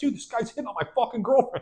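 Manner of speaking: very high, pissed-off outburst. Retelling his complaint about a band member: imitating someone pissed off. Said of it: "he's pissed because he's like".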